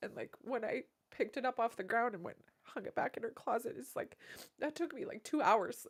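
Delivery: tearful, weeping speech, crying while talking. Recalling sitting for hours smelling an unwashed item she wore, crying while talking. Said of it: "I'm crying all over the microphone again".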